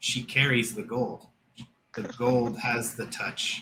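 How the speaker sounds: soft, hushed, eerie and uncanny whisper. Voicing a whisper the player hears in the background: whispering voice. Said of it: "behind the main part of the whisper".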